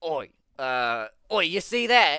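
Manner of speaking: put-on tipsy, loud, drawn-out dwarf voice calling out. Narrating a game scene, the drunk dwarf calls out to his companions, dwarf character voice. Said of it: "the dwarf says".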